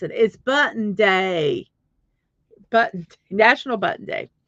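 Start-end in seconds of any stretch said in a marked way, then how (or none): 0.1-1.7 put-on Southern US accent. Restating the line as promised, in a southern accent. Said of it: "I'll say it in my southern accent".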